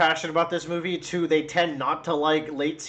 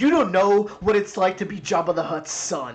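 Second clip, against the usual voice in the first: earnest delivery in the style of a movie line; 3 semitones higher than usual. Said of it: "I saw a clip of him going like".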